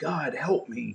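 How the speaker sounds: acted-out weeping, tearful crying. Retelling lying on the ground after breaking an ankle, retelling a crying plea. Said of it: "like crying and saying".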